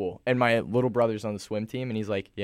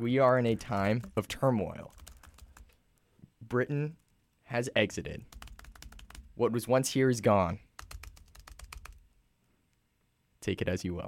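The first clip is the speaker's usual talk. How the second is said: put-on American presidential address, fireside-chat style delivery; 3 dB quieter than usual. Asked about Brexit as an American, answering in a put-on American voice. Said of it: "it's like FDR".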